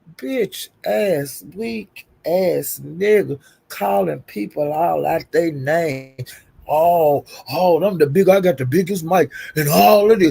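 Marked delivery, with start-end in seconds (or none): 6.7-10.1 mocking, boastful put-on tone. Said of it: "Doing this".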